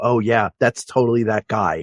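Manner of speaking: ordinary talk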